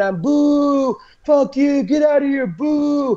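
very slow, long-held, high booing jeering scream. Retelling what a man at a rally screamed, retelling a scream. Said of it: "he was screaming".

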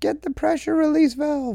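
high-pitched mock yell. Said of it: "somebody yells out".

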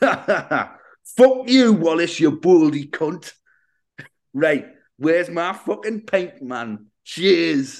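put-on Geordie accent. Speaker dubs Gromit's very first line while describing a scene, Geordie Gromit voice. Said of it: "I knew it was a Geordie Gromit".

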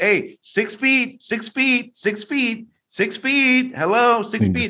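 very high-pitched, repeated shrieking scream. Retelling shouting at a man walking past, re-enacting the scream. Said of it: "I screamed at him".

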